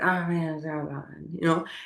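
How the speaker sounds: acted angry, fed-up, soft moody grumble. Retelling how Alberto's colleague walked into work, imitating an angry, moody coworker. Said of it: "he's super angry and moody and he's like".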